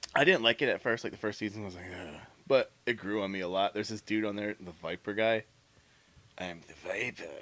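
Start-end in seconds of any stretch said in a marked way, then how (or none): 6.4-7.2 put-on low, quiet murmur in a strange German accent. Describing a show character who goes after the protagonist; The Viper's weird German accent. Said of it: "he's got this weird like German accent".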